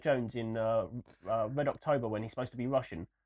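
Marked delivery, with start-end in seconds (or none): none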